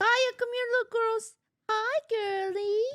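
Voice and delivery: put-on baby-talk voice of the kind used for pets. Performing a pet voice after being asked to: pet voice. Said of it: "let me hear your pet voice".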